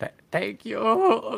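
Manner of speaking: very high, tearful stammer, on the verge of tears. Thanking a city official in character while starting to cry. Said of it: "Starts crying".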